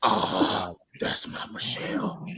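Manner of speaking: hushed, breathy, creepy near-whisper. Mocking a comment someone made while chatting with others, in a put-on creepy voice. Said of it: "Creepy voice".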